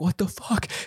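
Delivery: high, shocked parent voice. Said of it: "My parents are like".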